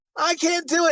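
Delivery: very high-pitched, whining voice. Retelling what a whiny character in a film said: imitating a whiny character. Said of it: "she's whiny".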